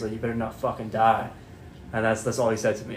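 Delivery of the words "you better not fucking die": hushed, close whisper. Retelling what the chief whispered in their ear at the bedside, whispered. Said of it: "he whispered in my ear".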